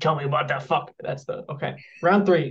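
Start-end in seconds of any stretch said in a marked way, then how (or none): 0.0-0.9 voice sinking into a low snarl, acted out. Reading a character's line from the story aloud, snarling. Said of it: "His voice dropping into a snarl".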